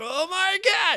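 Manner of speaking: play-acted overexcited blurt, very high and very loud. Retelling how a man in the booth reacted, imitating someone super excited. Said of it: "He was super excited".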